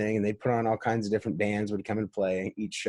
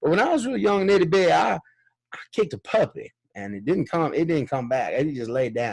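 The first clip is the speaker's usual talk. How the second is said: put-on very thick Southern accent, pitched up; 7 semitones higher, 4 dB louder than usual. Quoting what a five-year-old kid told them long ago, in a strong Southern accent. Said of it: "the strongest Southern accent I could even".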